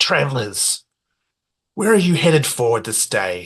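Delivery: fast, very raspy voice. Narrator voicing a helmeted figure greeting the travelers, raspy voice from the helmet. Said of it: "very kind of raspy".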